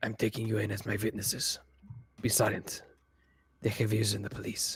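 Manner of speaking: whispering. Voicing Major Christova leading the group away quietly: whispering as Major Christova. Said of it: "he approaches you all and he whispers".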